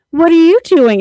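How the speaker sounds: man's very high, loud, fake girly voice. Complaining about male voice actors, mimicking one putting on a girl voice. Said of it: "puts on like a girl voice".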